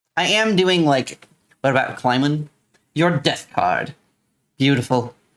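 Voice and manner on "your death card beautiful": spooky, creepy storyteller narration voice. Commenting on own gameplay, narrating for this guy in a creepy narration voiceover. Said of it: "a creepy narration voiceover for this guy".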